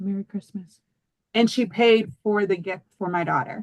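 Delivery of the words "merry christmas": mock whisper, quieter. Speaker retells what the lady at the register said while paying, retelling a whisper. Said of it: "she just whispered to me".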